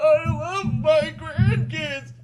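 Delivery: put-on muffled old man voice, pitched high. Retelling how someone said it through a door, in an old man voice. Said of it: "but in like an old man voice".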